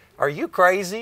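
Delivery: high, loud, incredulous tone of disbelief.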